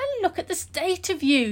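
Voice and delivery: high, startled, worried exclaiming. She greets Ali, who has come back after being missing; exclaiming. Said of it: "she exclaimed".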